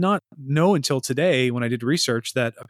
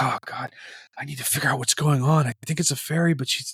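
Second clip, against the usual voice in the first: put-on despondent, dejected muttering. Acting out a comedy skit of Michael Cleary walking around: despondent Michael Cleary muttering. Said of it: "He's just all despondent".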